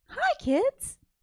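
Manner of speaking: very high, very loud, beaming preschool-style voice. Showing another speaker how Miss Rachel greets children: Miss Rachel voice. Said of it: "Miss Rachel".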